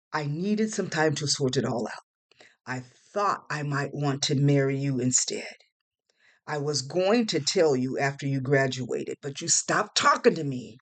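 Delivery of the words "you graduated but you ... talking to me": ordinary delivery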